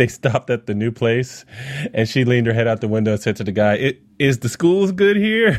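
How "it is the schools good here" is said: high, slow, garbled, hard-to-understand speech. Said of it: "I can't understand anything you're saying".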